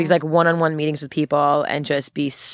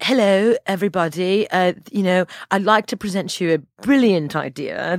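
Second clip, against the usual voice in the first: put-on smart-sounding, refined British accent; 3 semitones higher than usual. Explaining why a guy with a British accent presented the idea, put-on British accent. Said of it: "the British accent is like".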